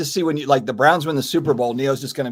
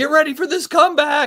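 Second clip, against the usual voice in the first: acted, very high-pitched, teasing, joking holler; 13 semitones higher than usual. Retelling yelling at the fans during a Saints game, retelling a yell. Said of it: "I'm yelling at all the fans".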